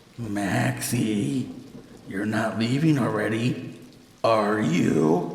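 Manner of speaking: guttural, waterlogged, wet gurgling inhuman voice. Narrator reading a thing that imitates a sister calling maxie, wet, guttural inhuman voice. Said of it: "strangely wet, guttural, like someone trying to speak with a mouthful of water".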